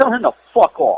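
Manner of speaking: loud line with voice pitched very high. Retelling calling out a messenger in front of the boys, retelling saying it loud. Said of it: "So I say it loud".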